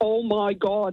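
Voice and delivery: put-on broad Derry accent laid on thick. Telling of hearing a cousin from Northern Ireland in the toilets, in a thick Derry accent. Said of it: "in a really thick Derry accent".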